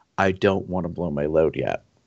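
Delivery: re-enacted whisper. Quoting what a man leaned down and said mid-encounter, retelling a whisper. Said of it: "he leans down and he whispers".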